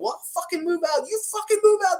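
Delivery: very high-pitched, heated, angry yelling. Retelling a shouting match with the landlord, re-enacting an angry yell. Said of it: "Like we yell at each other".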